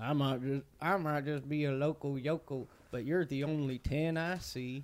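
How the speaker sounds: put-on southern gentleman. Asked by friends to do a new character again: southern gentleman voice. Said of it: "yeah do it again".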